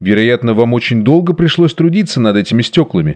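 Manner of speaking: ordinary talk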